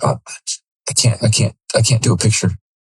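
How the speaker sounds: acted tearful, crying voice. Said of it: "And I'm clearly crying".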